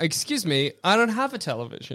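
quiet, soft, smug tone. Recapping a film scene, quoting her reply to a man from television, mock-smug. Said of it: "Really smugly".

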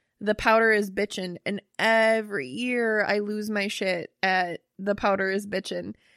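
ordinary talk

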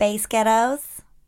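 attempted American accent. Taking up a challenge to do an American accent, American accent. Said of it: "challenge for you is to get an American accent".

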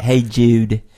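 Liverpudlian accent. Repeating the phrase to figure out how it's pronounced, in a Liverpool accent. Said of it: "because of their Liverpool accent".

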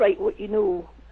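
ordinary talk, nothing marked

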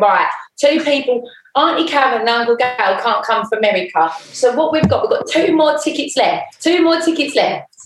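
put-on Essex accent. Retelling mum counting wedding guests, imitating mum, East End Essex accent. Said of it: "in a typical East End slash Essex accent".

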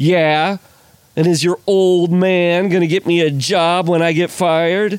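acted, theatrical amateur line reading. Retelling a movie scene, imitating the boat driver: community theater level acting. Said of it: "community theater level acting".

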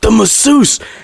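put-on whispering voice. Retelling a phone call from someone hiding in a camper: imitating someone whispering. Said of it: "Why are you whispering?".

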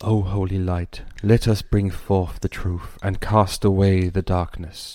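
spoken in a whisper. The narrator voices a character's invocation of holy light, whispering. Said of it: "You hear him whisper".

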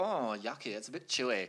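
put-on flamboyant German accent.

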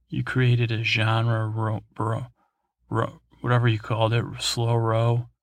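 usual speaking voice

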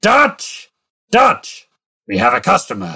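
high, full-voice scream at the top of the lungs. A game master voices a man with a broom calling for the captain; screaming at the top of his voice. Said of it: "he just screams at the top of his voice".

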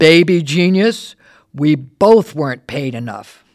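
big, loud, booming declaration. Retelling her reply when you introduced yourself at the bar, imitating Miss Turner's booming voice. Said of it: "in her booming voice".

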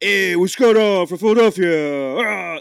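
drawn-out, very loud, slow Brooklyn accent. Describing how others imitate a Philly accent, the speaker does their version: Brooklyn or Long Island accent. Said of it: "they would do like a Brooklyn or like Long Island kind of thing".

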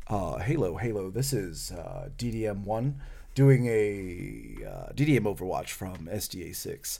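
mimicked hushed, sensible voice. Retelling how a sniper called in on the radio; imitating a very quiet, sensible voice. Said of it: "Very quietly, but in a very sensible tone of voice".

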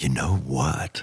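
soft, hushed, conspiratorial put-on voice. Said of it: "Lux would always talk very soft".

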